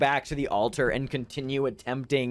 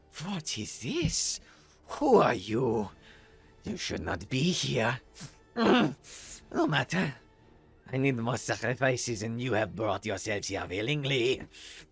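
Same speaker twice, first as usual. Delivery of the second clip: strained, pained words forced through clenched teeth; 4 dB quieter than usual. Voicing a wounded cult leader confronting intruders: speaking through gritted teeth in pain. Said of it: "grits the pain. He says".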